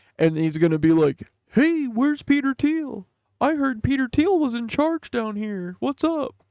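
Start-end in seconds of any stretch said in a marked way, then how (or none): 1.5-6.3 high, goofy giant bird character voice. Speaker describes how an imagined giant character will talk: Big Bird voice. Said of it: "He's going to kind of sound like Big Bird".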